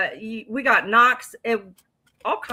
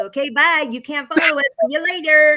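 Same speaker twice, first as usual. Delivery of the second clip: mock dismissive brush-off, higher and louder; 5 semitones higher, 4 dB louder than usual. Retelling a friend leaving an investigation site: imitating a friend's dismissive goodbye. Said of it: "Why you gotta say it like that?".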